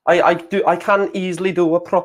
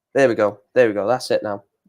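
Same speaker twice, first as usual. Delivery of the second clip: normal talking voice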